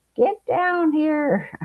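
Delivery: shrill, high-pitched bellowing yell. Quoting your husband calling you downstairs to see something: retelling a bellow. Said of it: "my husband's bellowing at me".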